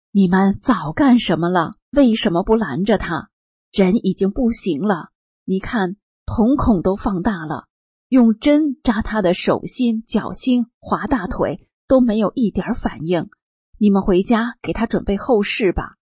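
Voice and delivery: ordinary talk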